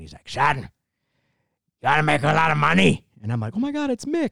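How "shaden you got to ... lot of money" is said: rough, creaky voice of an aging man. Retelling how someone imitated an old coach mentoring a young man: imitating an old man. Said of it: "he does the impression of the old man".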